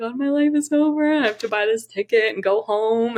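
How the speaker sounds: tearful, crying words. Retelling a phone call to mom: imitating own past crying. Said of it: "I'm crying".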